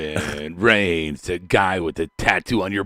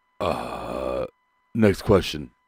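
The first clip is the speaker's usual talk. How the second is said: deep, very low voice over heavy breathing; 8 semitones lower, 4 dB quieter than usual. Imitating how Medine always breathes heavily: Medine impression. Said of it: "it's like you always do a heavy breathe. You're like".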